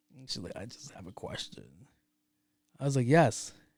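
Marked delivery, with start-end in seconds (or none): 0.6-1.7 tiny, raspy little whispered voice. Retelling what she asked the speaker, imitating a little raspy voice. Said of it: "that little raspy voice shit".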